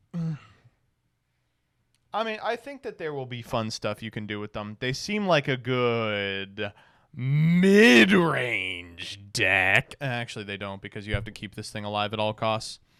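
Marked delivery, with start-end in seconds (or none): 4.8-9.9 "mid" heavily stressed, dragged out slow and loud. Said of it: "Emphasis on the mid".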